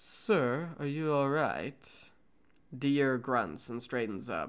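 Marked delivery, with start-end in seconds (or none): 0.0-1.9 slow, unhurried, sinister, effeminate villain voice. Trying a character's line a second time, in an effeminate evil voice. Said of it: "in an effeminate evil voice".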